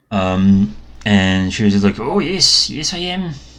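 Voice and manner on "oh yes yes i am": put-on slow, high-pitched elderly dwarf woman voice. Narrator voicing the dwarf granny answering a question, in an old dwarf woman voice. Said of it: "I don't know how to make an old woman dwarf voice".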